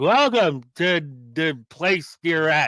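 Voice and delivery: slow, drawn-out delivery in a signature style. Welcoming listeners to the show: Ric Flair style. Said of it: "I could do it in Ric Flair style".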